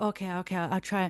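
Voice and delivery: put-on thick, heavy Caribbean accent. Quoting their nan's reply about coming to a gig, thick Caribbean accent. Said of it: "she's got like a real thick Caribbean accent".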